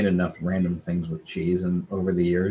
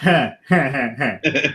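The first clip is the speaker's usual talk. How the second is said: very slow, drawn-out heh laugh, each heh stretched; 6 semitones higher, 4 dB louder than usual. Recalling your reaction on seeing one in town years ago, imitating a Squidward laugh. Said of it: "like a halfway Squidward".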